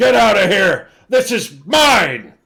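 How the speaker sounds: high-pitched, shrill, very loud screaming roar. Voicing a roaring beast ordering the party away: yelling. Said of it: "she'll yell".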